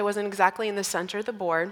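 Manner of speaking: usual speaking voice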